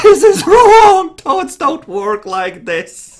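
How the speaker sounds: very high, loud, slow scream. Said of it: "inside you screaming".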